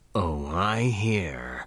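smoky baritone growl, low, satisfied, drawn out. A huge mercenary answers an order over the squad channel, growling with satisfaction. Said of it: "the huge merc growled, satisfaction lacing her smoky baritone".

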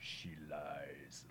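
very low, very quiet, weird demonic murmur. Imitating an actor's line from a movie: weird demonic voice. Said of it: "he has that very weird demonic voice".

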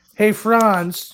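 mock calling out.

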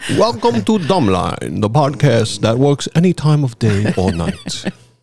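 heavy, put-on, old horror Transylvanian vampire accent. Opening the podcast, the host welcomes listeners in a Dracula voice. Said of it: "Why am I talking like Dracula?".

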